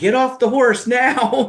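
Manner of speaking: shrill, very high-pitched, loud yelling. Retelling commands to a riding student: imitating yelling an order. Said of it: "I have never yelled at any of my students unless".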